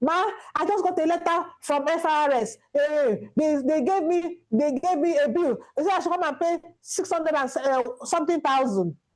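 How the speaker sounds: put-on female voice, mild half-shouting, complaining. Speaker retells a woman calling about a bill, imitating a woman shouting. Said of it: "she was shouting".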